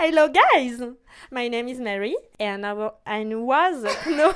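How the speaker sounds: careful, effortful English accent. Reading a written english self-introduction with the best accent possible. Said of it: "le meilleur accent possible".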